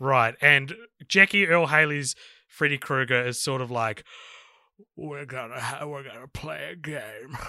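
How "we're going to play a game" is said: put-on drawled character voice. Asked what Freddy Krueger sounds like: drawled Freddy Krueger impression. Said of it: "It's like drawled out".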